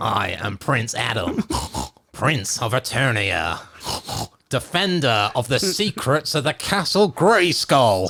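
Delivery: pig voice, oinks between words. Asked by another speaker to do the line like a pig: pig voice. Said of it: "do it like a pig".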